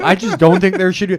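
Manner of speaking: high, loud, self-righteous mock voice. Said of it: "She thinks".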